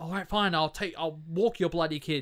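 angry, cross, grudging, giving-in outburst. Retelling a film scene where he agrees to walk the kids: imitating someone angry. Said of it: "He's angry at Ray".

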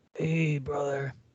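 bored, deflated delivery with energy sucked out. Imagining a censored wrestler who is really boring: boring censored Macho Man voice. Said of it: "really boring and like".

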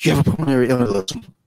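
high, intense, alarmed, panicked urgent delivery. Retelling what he said as he rushed into the back room, imitating panicked intensity. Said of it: "he says like with this like intensity".

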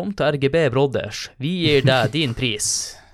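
put-on northern Norwegian accent. Quoting how northerners would say it, in a Northern Norwegian accent. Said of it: "For å sitere sånn nordlendinger".

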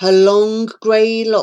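plain

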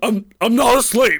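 very high, startled, just-woken blurt. Retelling how a friend startled himself awake: imitating Rich startled awake. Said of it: "all of a sudden he just kinda startled himself awake".

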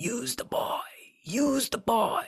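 rasping villain voice, pitched very high. A podcast host retells the mirror scene in a high rasping Voldemort voice. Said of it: "high-pitched, rasping voice of Voldemort".

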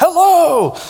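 put-on piercing, shrill, very high tiny little-kid yell. Retelling how a four-year-old yelled at diners: imitating a child yelling hello. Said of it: "when he yelled at them".

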